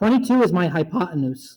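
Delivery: cracking, breaking voice, cracks mid-line. Speaker labels a triangle diagram while solving a math example, voice cracking. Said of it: "Ignore the voice crack".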